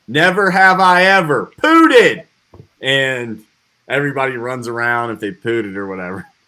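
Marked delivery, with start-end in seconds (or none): 0.1-2.2 high, drawn-out yell carrying across the room. Retelling a game where someone yelled a line: imitating someone yelling. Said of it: "he yells out".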